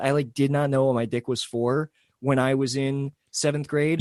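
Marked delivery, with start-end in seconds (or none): none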